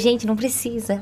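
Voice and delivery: ordinary talk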